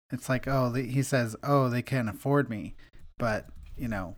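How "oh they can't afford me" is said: ordinary delivery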